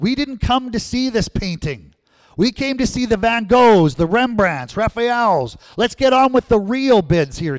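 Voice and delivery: irate, angry, loud, high-pitched shout. At an auction, another voice objects to the bidding with angry shouting. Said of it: "Another voice angrily shouted out".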